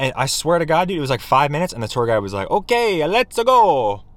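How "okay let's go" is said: put-on Italian accent, pitched up. Quoting the Sistine Chapel tour guide in a put-on Italian accent. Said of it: "You like my Italian impression?".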